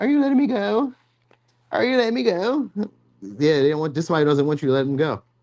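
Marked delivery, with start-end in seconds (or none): 0.0-2.7 put-on woman's voice, pitched very high. Acting out a person who misses the listener: imitating a woman's voice. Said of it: "I say it like a woman".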